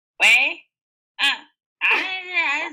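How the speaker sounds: very slow, loud, high, angry, drawn-out hesitation. Speaker retells a woman answering her husband's call, imitating her angry tone. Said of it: "it's like she's so mad or something".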